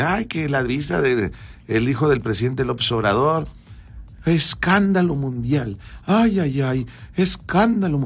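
derisive, ridiculing, scornful tone. Speaker ridiculing the president's reaction, mocking Claudia Sheinbaum's tone. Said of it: "así con ese tono".

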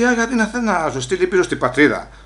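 ordinary delivery

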